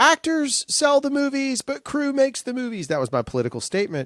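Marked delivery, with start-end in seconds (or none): 0.0-2.9 acted, shrill, very high screaming. Retelling walking off the Oscars stage as the music played: retelling a scream. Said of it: "and I screamed".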